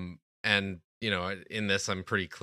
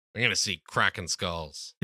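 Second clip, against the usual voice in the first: ordinary delivery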